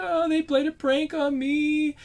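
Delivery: very high, whiny, complaining voice. Retelling how a girl ran to the unit's commander, imitating her whining. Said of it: "kind of whining like whining to him like".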